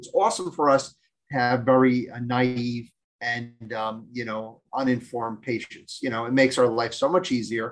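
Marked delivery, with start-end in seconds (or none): none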